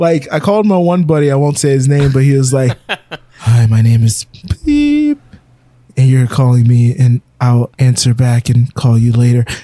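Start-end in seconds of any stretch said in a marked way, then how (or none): 3.4-9.4 voice dropped way below normal, deep hostage-style voice. Imitating a buddy's voicemail greeting, in a much lower tone than normal. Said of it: "much lower tone than they normally would speak".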